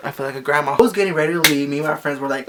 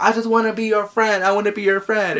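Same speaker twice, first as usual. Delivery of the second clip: put-on frantic, panicked voice, higher pitch; 6 semitones higher than usual. Retelling how a stalker jumped out and begged to be friends: imitating someone freaking out. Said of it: "he was, like, freaking out".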